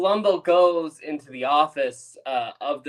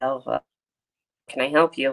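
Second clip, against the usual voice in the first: put-on weaselly little guy voice. Retelling a TV scene where an assistant walks in: weaselly little guy voice. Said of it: "he's this short little weaselly guy".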